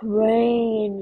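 put-on moan in a very deep, low voice. Sabrina calls out to a man in the dark, moaning in her deepest voice. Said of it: "Sabrina moaned in the deepest voice she could produce".

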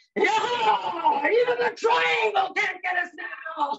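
mock very high yell, stretched out and even. Retelling a companion raising a bottle high: imitating someone screaming. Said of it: "raises the bottle high in the air and screams".

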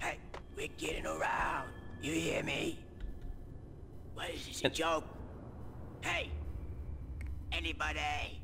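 low New York accent, smoker's voice. Demonstrating different new york accents, new york smoker accent. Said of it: "That's the New York smoker accent".

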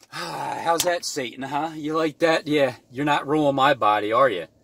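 mock, sneering, taunting jeer. Acting out what you say to tempting chicken while fasting: acting out mocking Satan. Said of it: "mocking Satan".

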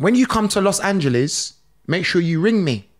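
ordinary talk

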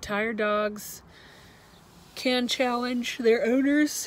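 loud, high speech with words stretched by a yawn. Speaker explaining how dogs can challenge their owners: yawning. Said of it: "excuse me for that yawn".

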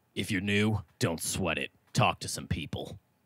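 low, rough, gruff delivery. Reading out rule number two for newcomers, in a gruff voice. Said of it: "do it in a gruff voice".

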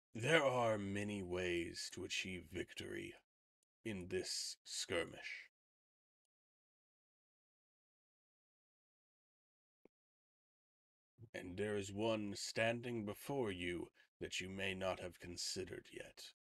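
put-on voice of a massive beast. Game master, in character as a giant creature, answers a player; giant creature character voice. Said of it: "The Kowaddle smiles. Spoken as a true paladin. It leans down its massive head and boops you on the forehead".

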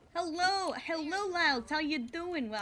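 brash, cartoonish Brooklyn street accent. Like a streamer putting on a brash city accent to greet a friend in the chat, enjoying the silly character. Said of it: "I'm doing a kind of Brooklyn accent currently".

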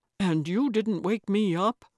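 ordinary talk

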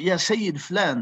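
normal talking voice

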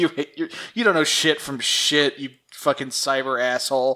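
ordinary delivery

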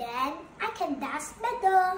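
usual speaking voice

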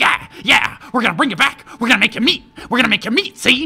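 cackling while talking. Narrating spear-wielding hunters taunting the thing they've cornered: cackling. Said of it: "they're like cackling like".

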